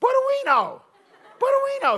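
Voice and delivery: fake high squeaky voice. Retelling how a man with a speech impediment called out his name, imitating Tommy's high squeaky voice. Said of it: "he had a high, squeaky voice".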